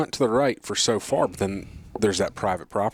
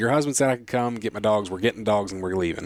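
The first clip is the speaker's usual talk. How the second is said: ordinary delivery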